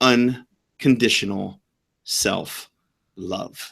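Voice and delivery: very slow, halting, deliberate delivery, word by word. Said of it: "The reason I said that so slow".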